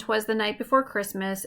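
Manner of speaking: plain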